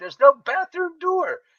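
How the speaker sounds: mock shouting, loud and pitched way up. Retelling a shouting match in a bathroom, imitating own yelling. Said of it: "me and this guy are yelling at each other".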